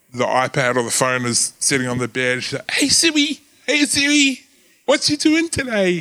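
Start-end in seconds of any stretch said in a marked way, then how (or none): 2.7-6.0 put-on very high-pitched young little-girl voice. Retelling a kid talking to Siri on the phone: imitating Lucy's voice. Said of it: "I can't even do her voice properly".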